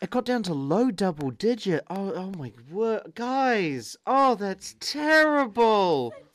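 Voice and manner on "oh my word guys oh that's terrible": very drawn-out, slow, swooping, sarcastic fake concern. Speaker retelling how they answer friends' weather complaints, sarcastic mock sympathy. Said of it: "why are you being so sarcastic?".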